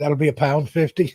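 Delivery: poorly done put-on Scottish accent. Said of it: "I can't do the Scottish accent".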